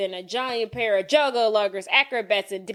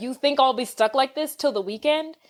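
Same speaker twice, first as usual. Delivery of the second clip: normal talking voice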